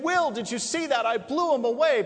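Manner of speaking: loud, excited crowing, acted out. Retelling a film scene where a young assassin celebrates his first kill, acting out excited celebration. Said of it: "And he's all excited".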